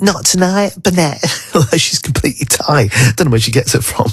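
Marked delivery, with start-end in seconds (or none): 0.0-1.2 put-on slight South London accent, pitched up. Repeating what the speaker's girlfriend says, in a slight South London accent. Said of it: "with that sort of slightly South London accent".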